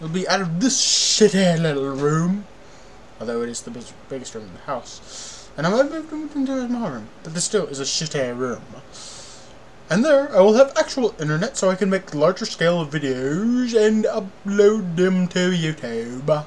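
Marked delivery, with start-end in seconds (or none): 9.9-16.4 grand, royal-sounding, put-on kingly voice. A youtuber talking to viewers in a video, using a kingly voice. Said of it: "Why did I make my voice like this now?".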